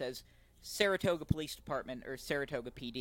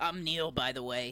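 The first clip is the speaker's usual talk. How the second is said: bad put-on vampire voice, slower; 4 dB louder than usual. Voicing a Nosferatu who introduces himself to the players: bad Nosferatu voice. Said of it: "says the Nosferatu. That's a bad one".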